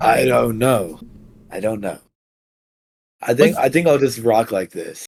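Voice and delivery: unusually deep voice. Answering a friend who asks about your voice: unusually deep voice. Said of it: "Why your voice sound like that?".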